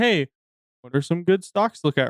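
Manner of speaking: ordinary delivery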